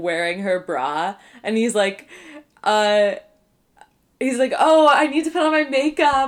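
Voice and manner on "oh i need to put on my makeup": high, teasing, mocking voice. Retelling a scene where Toby mocks his sister: imitating Toby mocking her. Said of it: "he's, like, mocking her".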